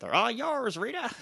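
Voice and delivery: odd squeaky voice, very high and weird. Speaker recapping a Power Rangers scene, quoting a line said to Rita, imitating a really weird voice. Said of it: "Says that to her in a really weird voice".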